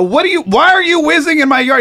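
very high, shrill yelling outburst. Retelling catching someone peeing in the yard: retelling own past yell. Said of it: "So I start yelling".

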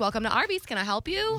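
pleasant service-worker voice. Recalling working the drive-thru on a headset, greeting customers in a nice voice. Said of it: "I would have a nice voice and I'd be like".

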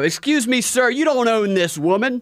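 very loud, high scolding. Acting out a made-up callout to explain virtue signaling: acting out speaking very loudly. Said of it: "and I very loudly, so that everybody can hear me".

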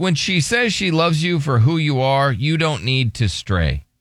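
ordinary talk

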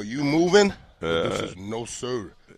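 slow, put-on French accent. Retelling a moment among French guys, replying in a French accent. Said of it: "And that was my French accent".

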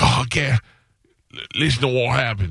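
slow, badly done put-on Scottish accent. Imitating a scottish guy seen in a video: bad scottish accent. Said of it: "Scottish people have the best accents that I can't do".

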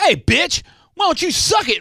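play-acted very high-pitched aggressive tone. Speaker imagining what they could have said to a woman, mock-aggressive retort. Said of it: "And I think aggressively".

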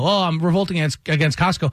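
ordinary delivery

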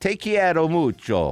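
Spanish phrase in a put-on Italian accent. Repeating the spanish phrase for the player: put-on italian accent. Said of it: "I did that one in an Italian accent".

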